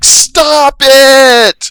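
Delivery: very loud, very high, shrill, stretched scream. Narrating a scene where she finally stands up, retelling a shout at full lungs. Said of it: "shouts at the top of her lungs".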